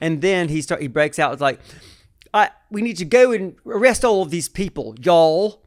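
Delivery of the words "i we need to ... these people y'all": bad, sloppy, half-done put-on Southern accent, loud. Speaker retells a man half-assing the accent: shitty Southern accent. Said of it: "doing a shitty version of the accent".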